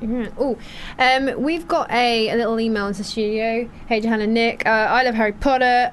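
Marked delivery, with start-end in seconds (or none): none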